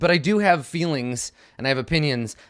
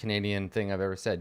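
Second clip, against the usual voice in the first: ordinary delivery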